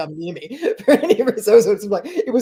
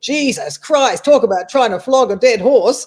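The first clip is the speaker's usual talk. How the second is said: best-effort put-on Australian accent; 4 semitones higher, 4 dB louder than usual. Quoting how the speaker's gp described a test result, in a put-on australian accent. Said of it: "my best Australian accent".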